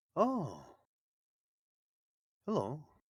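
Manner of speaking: small stone giant voice, high and swooping. Voicing a little stone giant greeting a player: little stone giant voice. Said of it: "He will very slowly kinda turn his head over and just go".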